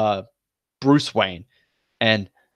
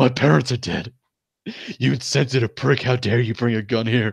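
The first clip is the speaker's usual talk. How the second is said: put-on sobbing outburst. Retelling a comic scene where Joker brings a gun, Batman mock sobbing. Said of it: "Batman just like starts sobbing".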